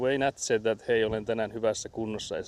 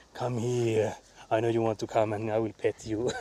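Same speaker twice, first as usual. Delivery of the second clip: put-on creepy old man voice. Retelling how a girl coaxes her cat from under the bed, imitating a creepy old man. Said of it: "the way she speaks to her cat is like a creepy old man".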